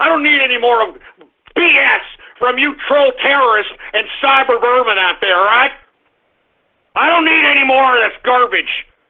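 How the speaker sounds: too wound up, boiling-over, ranting tirade. Ranting at troll terrorists and cyber vermin: too wound up. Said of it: "it sounds like I'm getting a little bit too wound up".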